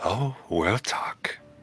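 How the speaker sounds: small, tiny little voice. Voicing something at the door answering the players: small voice. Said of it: "Hear a small voice at the door".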